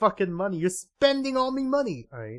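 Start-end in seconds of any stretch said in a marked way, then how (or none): 0.6-2.1 bad, pitched-up cartoon voice. Reading game dialogue aloud in an attempted Mister Krabs voice. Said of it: "I can't do a Mister Krabs voice".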